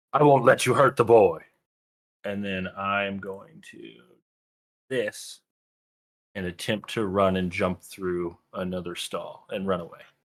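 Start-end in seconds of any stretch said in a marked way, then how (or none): 0.1-1.4 firm, calm, steady, stern raised yell. Speaking in character to pursuers, hand out toward a companion: in-character yell, calm and stern. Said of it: "I'm gonna yell".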